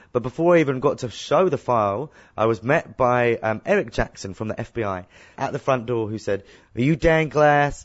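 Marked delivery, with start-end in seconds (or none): 6.8-7.9 awful, laid-on, put-on American accent. Retelling an FBI agent at the front door, doing [name]'s American accent. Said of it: "Sorry for my American accent, it's awful".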